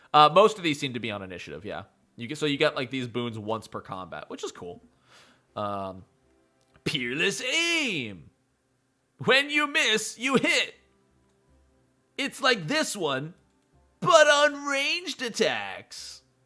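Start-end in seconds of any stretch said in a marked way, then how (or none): 6.8-16.1 silly put-on, slow, high, annoying reading voice. Reading game ability descriptions aloud in an annoying put-on voice. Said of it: "Sorry I'm doing this annoying voice".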